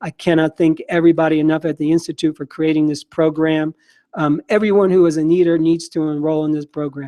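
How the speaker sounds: plain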